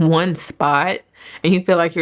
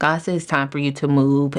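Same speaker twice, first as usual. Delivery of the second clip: ordinary delivery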